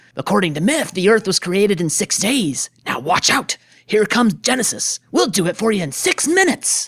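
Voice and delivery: passionate, heated, impassioned arguing tone. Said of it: "he can be very impassioned when he argues with Spock".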